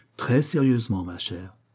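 ordinary delivery

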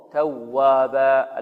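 heavy stress on the doubled waw of tawwaban. Arabic lesson on stressing doubled letters: stressed doubled w in tawwaban. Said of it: "فلابد أن ننبر هذه الواو".

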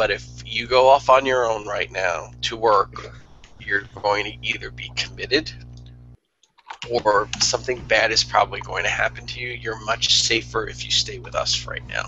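dropping into a stage whisper. In a scene, speaking to someone who thinks it's a joke, whispering. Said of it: "And I'm going to whisper".

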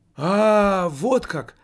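happy, joyful, exclaiming outburst. Narrator reads a teenager answering a man, joyful exclamation. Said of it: "радостно воскликнул подросток".

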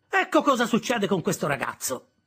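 high-pitched protesting voice. The narrator's sister speaks about him to others, protesting. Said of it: "protestò mia sorella".

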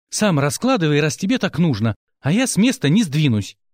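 plain

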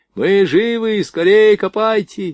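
full-force, all-out shout, very high and slow. Buried underground, an ensign shouts up to rescuers digging toward him, with all his strength. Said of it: "изо всех сил закричал прапорщик".

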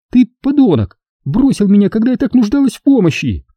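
scornful, contemptuous, very high pitch. A woman rebukes the narrator who just greeted her, contemptuous. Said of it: "презрительно фыркнула она".

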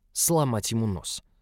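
ordinary delivery

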